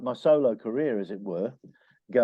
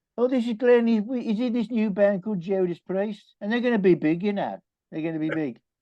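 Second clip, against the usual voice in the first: put-on broad Brummie accent, laid on thick, pitched up; 8 semitones higher than usual. Remembering a band manager introducing Glenn, the speaker quotes Dave's thick Birmingham accent. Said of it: "in his thick Birmingham accent".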